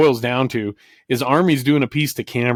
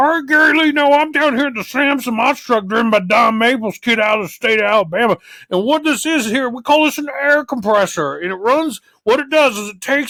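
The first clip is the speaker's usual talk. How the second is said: very high, squealing, bad announcer voice; 12 semitones higher than usual. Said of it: "the shitty Army Armstrong impression".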